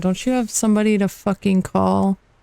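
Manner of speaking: dry, flat deadpan, no inflection. Sega answers the player who wants her phone, deadpan. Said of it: "Sega's gonna like deadpan you".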